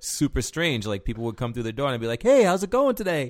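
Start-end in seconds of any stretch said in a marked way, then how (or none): 2.2-3.3 acted-out warm, very high, loud, friendly voice. Retelling greeting people at the door while bouncing: imitating own warm friendly greeting. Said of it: "the persona that I took on when I was bouncing".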